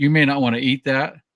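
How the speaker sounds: put-on non-native broken English. Retelling a local at a buffet in china giving a warning: imitating broken english. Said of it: "he goes in his broken English".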